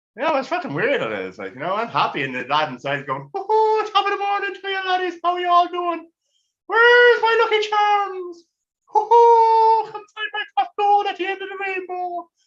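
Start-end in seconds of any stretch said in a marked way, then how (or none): 3.4-12.3 very high, over-the-top, exaggerated Irish leprechaun brogue. Describing his happy inner voice, the speaker acts it out as an exaggerated Irish leprechaun. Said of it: "typical Irish leprechaun when he's going mental".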